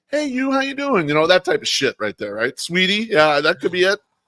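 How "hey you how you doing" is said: play-acted sugar-sweet, friendly tone. Describing how a guy greets a girl, imitating a sweet greeting. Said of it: "the sweet".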